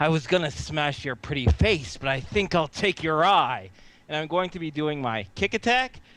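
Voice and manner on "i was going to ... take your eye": words forced out through clenched, gritted teeth. Wounded player character speaks to an opponent, through gritted teeth. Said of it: "through gritted teeth".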